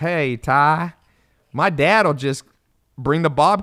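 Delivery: put-on country accent. Quoting how another person used to talk to you, in a country accent. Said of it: "he had this country accent".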